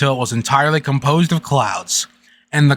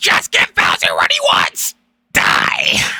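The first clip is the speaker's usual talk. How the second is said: deliberately bad put-on creature character voice; 9 semitones lower than usual. Reading a Mario game's dialogue box aloud, in a Toad voice. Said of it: "It's the worst toad, toad voice ever".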